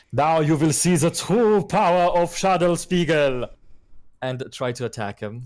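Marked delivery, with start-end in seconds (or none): 0.1-3.5 very loud, high-pitched shouted war cry. Charging an enemy in character and yelling out: yelling a battle cry. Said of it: "I'm just going to yell out".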